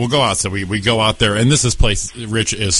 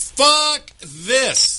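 put-on super loud, very high, shrill outburst. Comedian on stage retelling one guy's reaction to the set: retelling a super loud outburst. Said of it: "went like this super loud".

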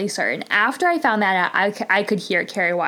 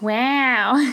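overly nasal, drawn-out put-on voice; 4 semitones higher than usual. Attempting an impression on the word wow: too-nasal impression voice. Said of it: "that's the closest I can get. I feel like it's too nasally".

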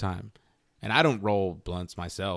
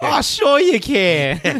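put-on Jersey accent, very high, very loud, shrill; 13 semitones higher, 10 dB louder than usual. Retelling a woman's answer to his question, imitating a jersey accent. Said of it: "she sounded a little bit from like she was from Jersey".

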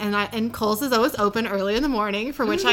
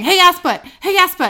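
put-on dude voice, pitched high; 8 semitones higher, 8 dB louder than usual. Retelling a phone notification going off in a restroom stall: imitating a dude's voice. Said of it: "in, like, a dude's voice".

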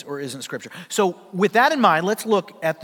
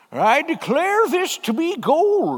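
put-on very high, swooping, grand old-prospector voice; 11 semitones higher, 3 dB louder than usual. Holding a gold nugget aloft after emerging from a shaft: prospector voice. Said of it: "with your best prospector voice".

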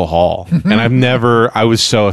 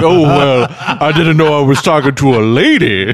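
slow, drawn-out, high-pitched cartoon rooster voice; 5 semitones higher than usual. Retelling what the cop said to Pee-wee dressed as a lady: Foghorn Leghorn voice. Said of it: "He's Foghorn Leghorn".

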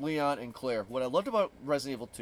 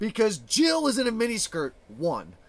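raised voice, louder and higher; 8 semitones higher, 7 dB louder than usual. Arguing with another speaker over the best Resident Evil game, raised voice. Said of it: "I am raising my voice".

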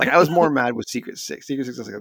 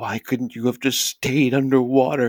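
put-on crying voice, louder; 3 dB louder than usual. Retelling Cybersaur's last words to Godzilla, imitating Cybersaur crying. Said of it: "And he's like crying and he's saying it".

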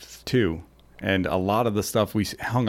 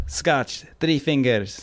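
put-on slight Jamaican accent, pitched up; 5 semitones higher than usual. Speaker quoting their mom during a whiskey tasting, slight Jamaican accent. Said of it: "that sounded a little Jamaican".

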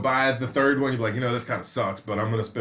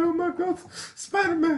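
mock crying, higher. Retelling how a crying girl in the cinema reacted: imitating a girl crying.

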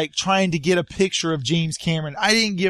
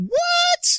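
very high, squeaky voice of stunned disbelief. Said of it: "And I went".

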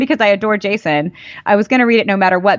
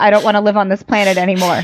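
ordinary delivery

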